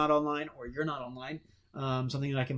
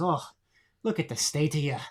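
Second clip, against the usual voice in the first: put-on over-the-top Irish accent, laid on really thick; 3 dB louder than usual. Player retelling his game character Zane Flint's line over an enemy's corpse, over-the-top Irish accent. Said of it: "in his over the top Irish accent".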